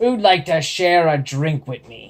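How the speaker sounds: loud, rough, gravelly bellow. Reading a story aloud, a character calls to the bar: bellowing in a gravelly voice. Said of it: "bellowed out in his most gravelly voice".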